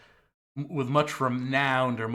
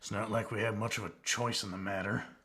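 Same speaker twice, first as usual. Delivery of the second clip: hushed muttering under the breath; 3 semitones lower, 7 dB quieter than usual. Voicing a character who speaks under his breath: muttering under his breath. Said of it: "you hear Jason under his breath".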